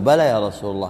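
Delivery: ordinary delivery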